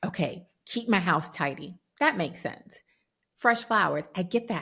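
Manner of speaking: ordinary talk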